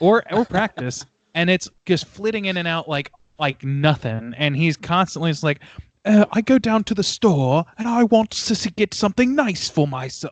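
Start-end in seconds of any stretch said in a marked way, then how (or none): 6.1-10.3 snooty fake mid-Atlantic British accent, raised pitch. Mocking someone's bad attempt at a British accent: mocking a haughty fake British accent. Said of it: "he's just very like very haughty, sort of like like trying to do like a mid mid Atlantic accent".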